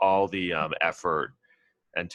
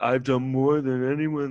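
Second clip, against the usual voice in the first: pitched-up boastful bragging in a raised voice; 7 semitones higher, 4 dB louder than usual. Mocking a politician's bragging claims: impression of him boasting. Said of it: "That's my impression of him".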